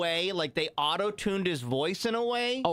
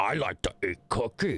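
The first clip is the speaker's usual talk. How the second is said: put-on puppet monster voice; 9 semitones lower than usual. Recalling a scene from The Office as an impression: Cookie Monster voice. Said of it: "weird Cookie Monster impression".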